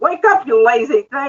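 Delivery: high, irritated, acted-out scolding shout. Retelling yelling at an unresponsive Google device: retelling a yell. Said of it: "so I'm yelling".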